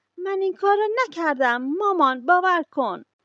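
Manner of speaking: loud, high, shouted protest. A child, doubted by his parents, cries out to his mother: shouting. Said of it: "فریاد زد".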